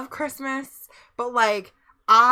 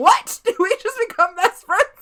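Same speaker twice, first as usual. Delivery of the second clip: shrill, full-throated, high, loud screaming; 7 semitones higher, 5 dB louder than usual. Quoting a follow alert of a movie line: imitating Will Ferrell screaming. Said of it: "my follow alert is him screaming".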